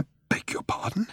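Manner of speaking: choked, hushed, breathy whispered splutter. A man hears an old man's odd name and reacts, spluttering. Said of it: "he spluttered".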